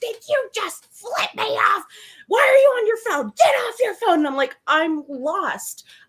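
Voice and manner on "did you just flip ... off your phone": acted, very high, full-force screaming. Retelling a driver who came back and screamed at her, imitating someone screaming. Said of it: "started screaming at me full force".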